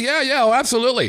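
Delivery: eager, keen, chirped high.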